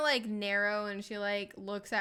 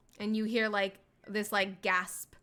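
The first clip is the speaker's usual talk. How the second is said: plain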